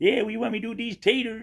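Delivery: put-on very high, southern, old gold-prospector voice. Retelling a coworker asking the head cook about potatoes: Mark's old prospector voice. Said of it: "he sounded like some old prospector".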